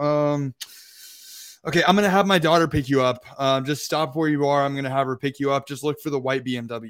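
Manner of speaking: acted, fed-up, put-upon, frustrated man's voice. Retelling the Airbnb guy's phone call: imitating a frustrated man. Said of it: "he sounds, like, frustrated".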